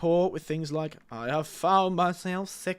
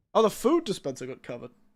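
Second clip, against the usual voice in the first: ordinary talk, nothing marked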